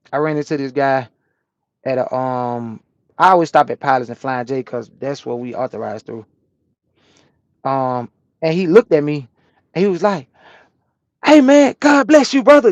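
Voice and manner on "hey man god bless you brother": put-on beaming, loud cheerful voice, pitched very high. Retelling a guy he ran into who was happy to see him, imitating a happy greeting. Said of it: "He was like real happy to see me".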